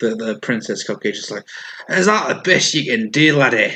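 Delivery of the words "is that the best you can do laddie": put-on Scottish accent. Voicing a character who mocks an attacker after a hit: Scottish accent. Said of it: "Don't know why she's Scottish now".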